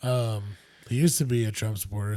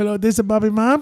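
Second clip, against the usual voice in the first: very high, very loud shrieking mother voice; 13 semitones higher, 11 dB louder than usual. Quoting a podcast bit: imitating Bobby's mom. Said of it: "his impersonation of Bobby's mom".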